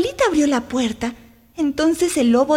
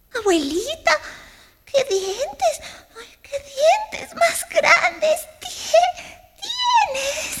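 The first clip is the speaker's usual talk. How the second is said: very high, scared stammer with stumbling words; 11 semitones higher, 3 dB quieter than usual. Caperucita speaks to the wolf she calls grandmother, stammering in fright. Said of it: "Tartamudeó asustada la niña".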